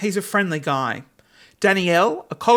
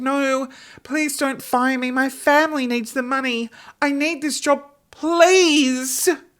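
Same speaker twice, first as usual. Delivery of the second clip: high, sad, fake pleading; 6 semitones higher than usual. Retelling pretending to beg a manager not to fire her: imitating acting sad, pleading. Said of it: "I started acting really sad".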